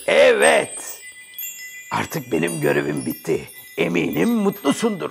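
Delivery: very low, swooping genie character voice. The genie of the lamp speaks to the other character: genie of the lamp voice. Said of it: "Ben bu lambanın ciniyim".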